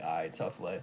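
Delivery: mock proud, self-congratulating praising tone. Retelling how a player reacts to his own basic layup: imitating him praising himself. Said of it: "He'll be like".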